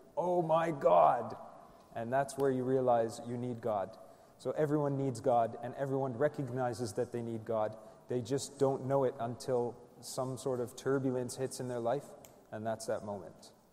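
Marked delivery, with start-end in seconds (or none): 0.2-1.4 loud, slow yelling in panic. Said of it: "the entire plane just starts yelling".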